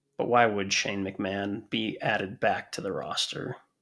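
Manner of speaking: slow, soft, disappointed tone. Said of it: "He sounds so disappointed".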